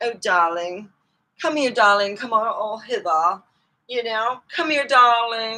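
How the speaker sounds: put-on English accent, done for fun. Showing off that they can do English people: put-on English accent. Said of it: "I can do English people".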